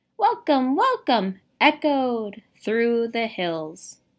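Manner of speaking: energetic loud reading. Reading a story passage to a class to show sound words: louder, lively reading. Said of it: "louder and much more lively".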